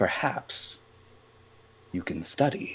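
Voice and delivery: gentle, very soft, hushed, soft-spoken voice. Recounting what they told a student desperate to pass their class, in a very soft voice. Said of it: "I told him in a very soft voice".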